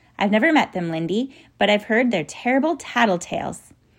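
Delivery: ordinary delivery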